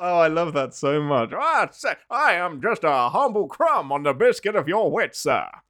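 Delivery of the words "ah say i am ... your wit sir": voice with a twang. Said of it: "Mark Twain twang".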